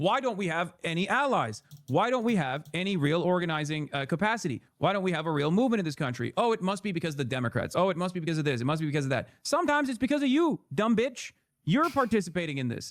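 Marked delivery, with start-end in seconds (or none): none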